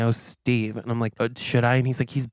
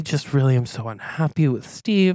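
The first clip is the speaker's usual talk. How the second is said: put-on crying voice of a man; 3 semitones higher than usual. Retelling what a crying man said when asked what happened, imitating someone crying. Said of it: "and he's crying visibly".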